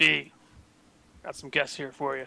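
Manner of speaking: grunted, grunting voice. Voicing a minotaur doorman announcing guests: grunting. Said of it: "He kinda grunts".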